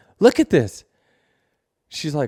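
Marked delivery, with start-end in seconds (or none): 0.2-0.8 very high-pitched, loud yell. Retelling calling out from the bus to watch the race: imitating own yelling. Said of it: "I'm yelling to Jordan's like".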